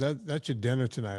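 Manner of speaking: usual speaking voice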